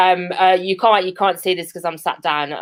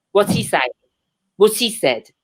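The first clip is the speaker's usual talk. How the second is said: ordinary delivery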